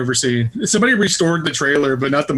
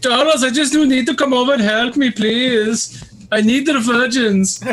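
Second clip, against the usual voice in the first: high, yelled, hollering delivery; 8 semitones higher than usual. Remembering days of hanging out with Udo Kier running around, do a Udo Kier yelling impression. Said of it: "just yelling things at you all the time".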